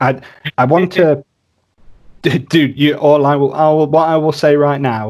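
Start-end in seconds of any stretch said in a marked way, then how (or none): 0.0-3.9 stammering, tongue-tied, stuttering restarts, tripping over words. An interviewer reacting to a guest's answers, stuttering. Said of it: "I'm stuttering because they, they are such good answers".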